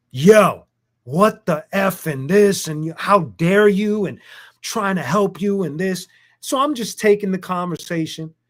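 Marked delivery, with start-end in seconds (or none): 0.1-6.0 angry, furious yelling rant. Retelling a phone call where two callers yelled at him: imitating someone yelling. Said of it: "they just start yelling at me".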